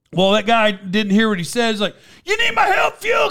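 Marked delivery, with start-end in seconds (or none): 2.3-3.3 shrill, very high yelling. Retelling how a super fan kept yelling at a wrestler: imitating someone yelling. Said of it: "'Cause he kept yelling it".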